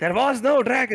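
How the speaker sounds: angry, loud, very high-pitched outburst. Voicing a character who denies a dragon attacked: loud angry insistence. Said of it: "says Korax loudly".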